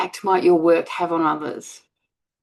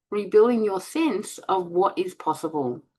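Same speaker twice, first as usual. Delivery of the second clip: plain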